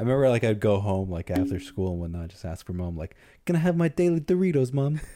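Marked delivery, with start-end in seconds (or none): 3.4-5.0 put-on high, posh little British boy voice. Recalling asking mom after school as a kid, little british boy voice. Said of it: "why are you British? Why are you a little British boy?".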